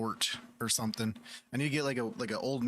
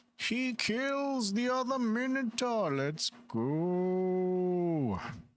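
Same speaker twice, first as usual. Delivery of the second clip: put-on old wise storyteller voice, higher; 9 semitones higher than usual. Picturing an old man in a robe playing the game: Deckard Cain voice. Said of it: "do Deckard Cain plays, uh, Godforge and be like".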